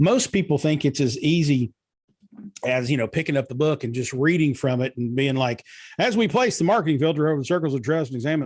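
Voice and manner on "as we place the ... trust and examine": rushed, slurred, run-together, pitched-up. Showing how people rush through reading an audiobook aloud, fast and slurred. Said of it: "I'm slurring all my words. I'm going too fast".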